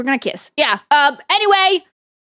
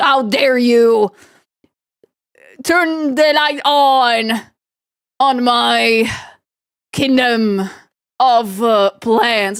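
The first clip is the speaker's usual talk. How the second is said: put-on indignant, very slow, outraged scolding, "on" stretched. Showing a photo of her looking mad, voicing her: mock angry voice. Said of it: "She looks so mad".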